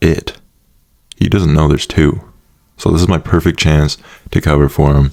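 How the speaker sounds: normal talking voice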